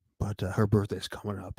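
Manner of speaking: hushed whisper. Speaker whispering so their mother doesn't hear, telling the other speaker; whispering. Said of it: "I'm whispering, so my mother doesn't hear".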